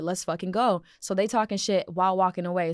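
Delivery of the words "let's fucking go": mock goading, egging-on tone. Retelling a street confrontation, imitating own goading of the other girls. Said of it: "I'm enticing them".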